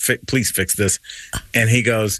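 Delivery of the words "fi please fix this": annoyed, insistent tone, lower. Retelling going to the manager about a card: retelling own past attitude. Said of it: "with this kinda attitude".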